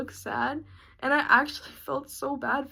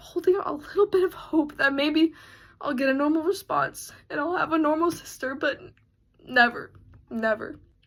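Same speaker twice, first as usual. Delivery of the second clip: tearful speech, crying while talking. Describing hoping for a normal response from a sister after fights: crying while speaking. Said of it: "I'm sorry I'm crying about this".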